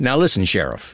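mildly nasal character voice. Showing how the character sounded, slightly nasal Cooper voice. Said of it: "almost a nasal quality to it".

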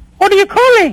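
deliberately changed voice. Answering a caller who recognizes the speaker: disguised voice. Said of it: "Why are you trying to change your voice?".

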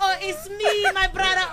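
high-pitched, pleading voice with Nigerian accent.

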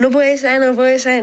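ordinary delivery

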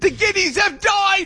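very high, hysterical shout.

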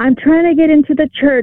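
high-pitched, lifted-up teacher voice. Retelling how a catechism teacher arrived at the locked church, imitating a high-pitched voice. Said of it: "in this high-pitched voice".

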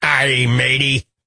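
put-on pirate accent and voice. Speaker marking Talk Like a Pirate Day with a doctor guest, pirate voice. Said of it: "it's Talk Like a Pirate Day".

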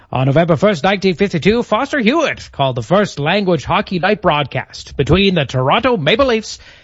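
put-on high, old-timey radio announcer voice.

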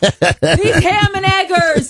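high-pitched, mild mock yell. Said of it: "he's yelling at the screen".

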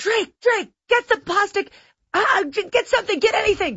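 frantic high-pitched yelling.

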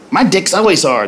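plain

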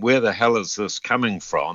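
ordinary delivery

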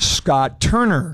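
very slow, drawn-out delivery.

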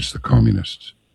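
quiet, hushed, slightly high under-the-breath murmur. Retelling what an older Greek man answered about a crowd: imitating a hushed tone. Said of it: "in kind of a hushed tone".

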